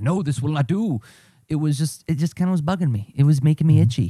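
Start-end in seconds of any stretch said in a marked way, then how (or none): 0.0-1.0 put-on German accent, much higher pitched. Imagining being a long-haired maestro with a baton, speaking in a german accent. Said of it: "with a German accent".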